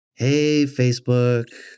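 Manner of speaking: mock boring, stalling delivery. Retelling how life coach videos all start: imitating a boring life coach video intro. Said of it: "They all start out like".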